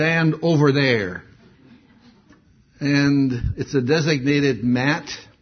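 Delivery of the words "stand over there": very rough, gruff, commanding voice. Retelling a security checkpoint, quoting the order given there, imitating a gruff order. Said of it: "in a very gruff voice".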